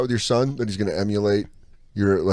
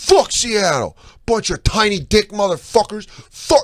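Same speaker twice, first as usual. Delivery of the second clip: yelling, higher pitched; 12 semitones higher, 3 dB louder than usual. Retelling a fan yelling at rival fans leaving a game: imitating someone yelling. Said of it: "this guy just starts yelling at Seahawks fans".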